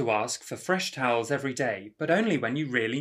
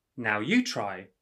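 ordinary talk, nothing marked

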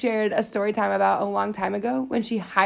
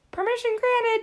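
very high, tiny, squeaky put-on voice. Retelling how someone asked his own foot for permission to speak, put-on high-pitched voice. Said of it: "respond in a high-pitched voice".

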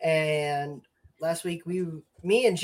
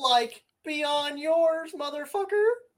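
put-on very high, way up cartoon stoner voice; 11 semitones higher than usual. Taking up a dare to do an impression: Shaggy impression. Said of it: "I think I could do a Shaggy impression".

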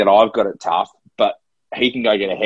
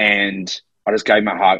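ordinary talk, nothing marked

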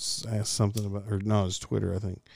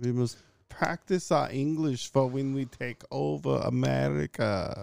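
put-on English with German accent, pitched up; 5 semitones higher than usual. Discussing a character who speaks english, doing a line in a german accent. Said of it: "speaking English with a German accent".

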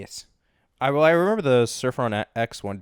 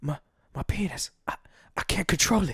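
put-on under-breath whisper, much higher, slower; 5 semitones higher, 6 dB quieter than usual. Retelling what you said in a quiet car, whispering under one's breath. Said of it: "very like whisper almost under my breath".

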